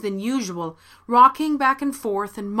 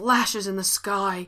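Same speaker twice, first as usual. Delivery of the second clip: muttered and mumbled at a slower pace; 4 dB quieter than usual. A man glares at the woman who says she is no witch, muttered. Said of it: "he muttered".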